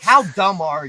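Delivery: acted-out yelling. Recounting a special guest referee announcement, the speaker acts out yelling at the TV. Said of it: "which has me yelling at my T V like".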